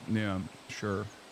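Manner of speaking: dead level monotone, no tune at all. Answer the other person with a short yes in the most monotone voice ever. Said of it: "He says in the most monotone voice ever".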